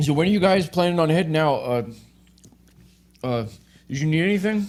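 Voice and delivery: talking around a mouthful. A man in the hallway waves the group over, talking with his mouth full. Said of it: "waves you over with his mouth full of food".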